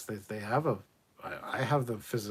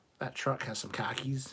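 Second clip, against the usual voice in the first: attempted Boston accent; 3 semitones higher than usual. Joking about which accent could have been used, trying a boston accent. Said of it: "We could have done one from Boston".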